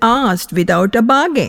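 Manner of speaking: plain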